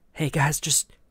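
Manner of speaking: hushed whisper. Whispering in character to the rest of the party: whispering to the party. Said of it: "I whisper to the, to the party".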